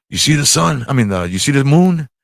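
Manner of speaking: put-on heavy Greek accent. Retelling what dad said on the ferry at night: imitating dad's heavy greek accent. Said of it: "my dad's got a heavy Greek accent".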